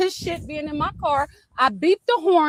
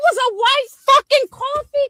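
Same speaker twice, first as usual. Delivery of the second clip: shrill, very high screaming yell; 9 semitones higher, 4 dB louder than usual. Answering someone who asked to search the car about a coffee cup, screaming. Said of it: "Why are you screaming?".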